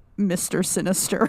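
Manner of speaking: normal talking voice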